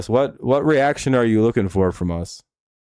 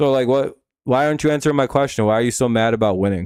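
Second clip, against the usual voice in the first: ordinary talk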